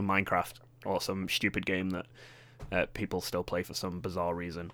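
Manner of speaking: usual speaking voice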